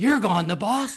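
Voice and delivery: mock, shrill, very high-pitched shrieking scream. Retelling how the wife screamed over the phone: imitating her screaming. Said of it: "She's screaming on the phone".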